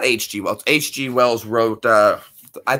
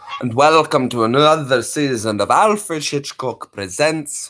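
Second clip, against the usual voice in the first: put-on slow British accent; 3 semitones higher than usual. Trying out an impression after viewers ask for it: Alfred Hitchcock impression. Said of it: "Let me hear his voice".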